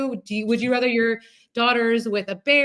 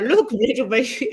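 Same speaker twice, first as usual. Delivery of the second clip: put-on Swedish-accented bear voice. Imagining a bear talking to the listener's daughters, in a Swedish-accented bear voice. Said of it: "why are you a Swedish bear?".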